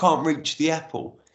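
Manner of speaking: sobbing, broken-up, words forced out through sobs. Retelling what was said to the hospital cleaner, imitating own sobbing. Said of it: "And I said through sobbing".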